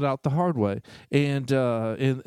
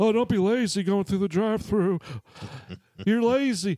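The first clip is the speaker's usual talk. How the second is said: put-on high-pitched voice of a very old man; 6 semitones higher than usual. Recounting what Jeff said while they were chatting, Jeff impression, sounding 85. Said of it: "Why do you sound 85 in that impersonation?".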